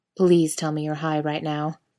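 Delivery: ordinary delivery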